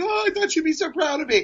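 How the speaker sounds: tearful, high voice through crying. Recounting a phone call with her, acting out his past self: imitating own past crying. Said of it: "so then I'm like crying".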